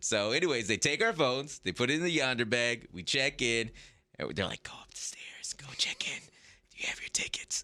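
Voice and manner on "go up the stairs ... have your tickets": soft, breathy whisper. Retelling what the whispering staff said at check-in: imitating staff whispering. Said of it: "they're all whispering".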